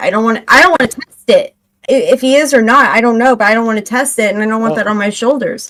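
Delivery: normal talking voice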